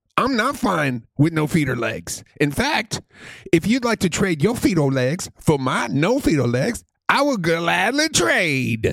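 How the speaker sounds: put-on, vague Jamaican accent. Speaking for people with no feet or legs, in a put-on accent. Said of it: "Are we in Jamaica now?".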